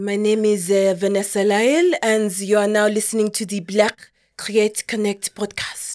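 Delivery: English spoken in a French accent throughout. Podcast host repeats the show intro: doing a French accent. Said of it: "My housemate is French, so I feel like I can".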